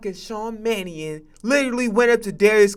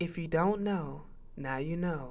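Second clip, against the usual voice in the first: very soft, hushed put-on politician voice; 5 semitones lower, 14 dB quieter than usual. Quoting a politician about a trade, imitating her voice: Kamala Harris voice. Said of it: "I'm just imitating her voice".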